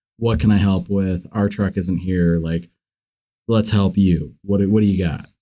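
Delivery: ordinary delivery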